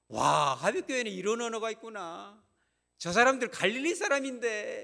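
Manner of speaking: high, loud, amazed, astonished cry.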